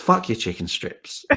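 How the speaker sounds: put-on Italian American New York accent. Retelling what the boy in the passenger seat replied, in a New York Italian American accent. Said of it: "but in a New York Italian American accent".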